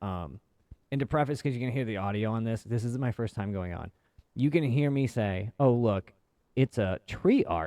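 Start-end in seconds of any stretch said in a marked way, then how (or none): 5.6-7.7 slow, loud mock sarcasm dripping off every word. Recalling their own remark from their first time going on, dripping with sarcasm. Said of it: "like dripping with sarcasm".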